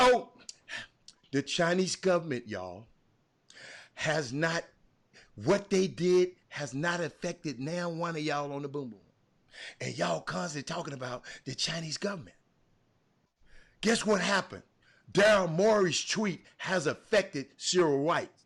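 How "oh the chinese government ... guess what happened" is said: quieter, lowered, soft and hushed delivery. Speaking to viewers on Facebook, the speaker switches to a lowered voice. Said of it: "Let me lower my voice".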